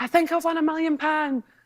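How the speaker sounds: high, overexcited, overreacting screamed exclamation. Recounting winning the lottery at home with mum, retelling a scream. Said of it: "And I'm screaming like".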